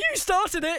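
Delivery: put-on very high, loud, flustered, panicked blurt. Retelling a football clash, imitating own panicked retort. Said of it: "I panicked and couldn't think what to say".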